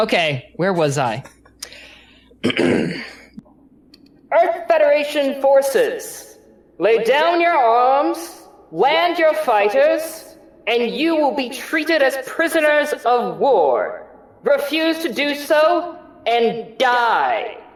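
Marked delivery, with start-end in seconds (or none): 2.4-17.5 blaring loudspeaker voice, very high, loud. Voicing a commander blaring a surrender demand over a speaker: Sturgeon blaring over a speaker. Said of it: "he's blaring this over, over the speaker".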